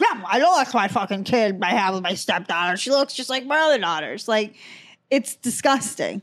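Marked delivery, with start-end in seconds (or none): 0.0-4.3 mock old man voice talking with mouth full. Imagining a grandfather eating mashed potatoes while talking: imitating old man talking with mouth full. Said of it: "eating mashed potatoes, and it's, like, popping out of his mouth".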